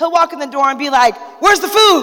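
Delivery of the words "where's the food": mock angry, aggressive tone, pitched up. The speaker imitates a partner walking in the door at home: imitating an aggressive demand. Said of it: "You say things like really aggressive and angry".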